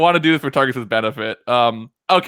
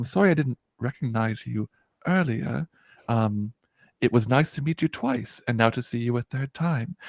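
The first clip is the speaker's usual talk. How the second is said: barely-there, very quiet, soft little voice; 7 dB quieter than usual. Retelling a woman apologizing for not recognizing someone earlier, very quiet voice. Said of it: "she gets like a very quiet voice".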